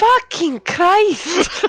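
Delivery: put-on very high Scottish-accented voice. Swearing in surprise during a game scene, Scottish accent. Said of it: "Turned to Scottish".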